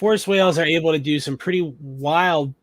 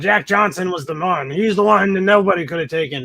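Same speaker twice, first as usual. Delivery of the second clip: put-on old boxing commentator voice; 4 semitones higher, 5 dB louder than usual. Describing an actor's role, the speaker mimics an old boxing commentator voice. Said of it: "incredibly old boxing commentator with a cigar".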